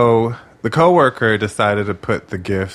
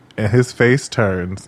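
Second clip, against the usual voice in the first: ordinary delivery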